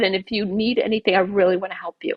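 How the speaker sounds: plain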